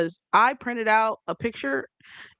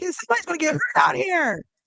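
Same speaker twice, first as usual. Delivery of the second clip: put-on shrill, high heckling yell; 10 semitones higher than usual. Retelling yelling from a courtside seat: imitating own courtside yell. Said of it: "so I'm like".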